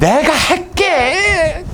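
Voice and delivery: put-on stubborn child voice, very high, slow, drawn out.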